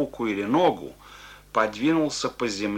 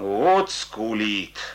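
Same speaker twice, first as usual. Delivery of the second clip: contemptuous, scornful, disdainful tone. Narrating a soldier remarking on a man who is crying: contemptuous. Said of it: "презрительно сказал солдат".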